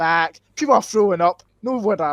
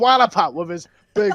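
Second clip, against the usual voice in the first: normal talking voice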